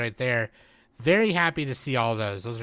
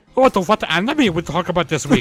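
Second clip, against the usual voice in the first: put-on German accent, higher and louder; 5 semitones higher, 10 dB louder than usual. Doing the other speaker's voice to their face: imitating Nick's voice. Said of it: "That's what you sound like".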